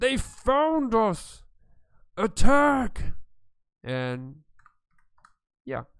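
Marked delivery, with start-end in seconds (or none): 0.0-3.1 high, loud shouting creature voice. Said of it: "he just says".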